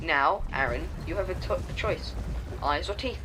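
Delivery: ordinary delivery, nothing marked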